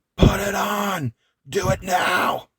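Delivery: put-on very high, very slow, drawn-out scream. Retelling a wrestling match where one wrestler screams orders: imitating someone screaming. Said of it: "Cody's just screaming".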